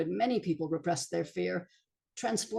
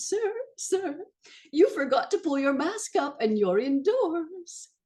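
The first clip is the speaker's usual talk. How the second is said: sweet, harmless, very high coo; 9 semitones higher, 4 dB louder than usual. Recounting approaching a man indoors without a mask, retelling a high cooing voice. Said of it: "In a high voice, looking sweet and harmless, I cooed".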